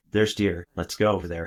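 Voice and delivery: ordinary talk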